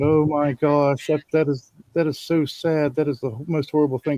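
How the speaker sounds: put-on concerned tone. Retelling how she reacted to your story of the fall, with mock concern. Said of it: "acting all concerned".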